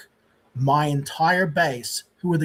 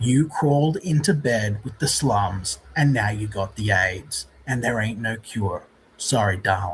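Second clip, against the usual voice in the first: put-on dead-serious delivery, much lower pitch; 6 semitones lower than usual. Redoing a line another speaker just quoted, quoting it dead seriously. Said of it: "You're saying it so seriously".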